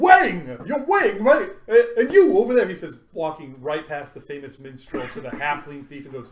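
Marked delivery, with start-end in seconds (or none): 0.0-2.7 very loud, relieved shout. Voicing a staggering stranger who greets two players: staggering, relieved stranger. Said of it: "a guy comes staggering up to the two of you guys and goes".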